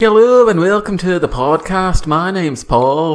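poorly faked Liverpool accent. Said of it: "it was supposed to be Paul McCartney".

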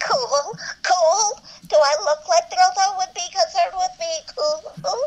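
voice pushed way up high. Repeating a favorite line quoted by the other speaker: Macy's voice. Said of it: "recited in Macy's voice".

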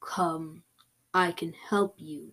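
deep, soft, rough scraggly voice. A narrator voices a mysterious voice heard in a field; deep, scraggly voice. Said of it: "I heard a deep, scraggly voice say".

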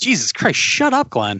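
exasperated, annoyed outburst. Retelling watching a video of oneself being loud: imitating annoyed self. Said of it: "even I was annoyed at myself".

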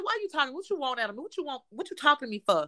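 mean, hostile, rude, dismissive tone. Retelling own reply to a date, imitating own mean tone. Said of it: "I did say it with that tone".

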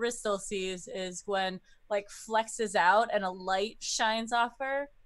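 plain

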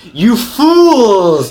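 very high, gloating villain laugh through the words. Revealing a villain's true identity to the party, laughing villainously. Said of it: "and then I start laughing".

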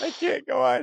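very high voice, words breaking up with laughter. Reacting to a joke during a podcast: laughing while talking. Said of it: "I'm laughing too fucking hard".

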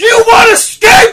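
very high, very loud, shrill full-throated scream. Retelling a scene where Superboy screams at Aqualad: imitating Superboy screaming. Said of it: "Superboy just turns round and screams".

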